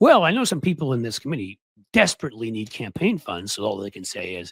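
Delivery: ordinary delivery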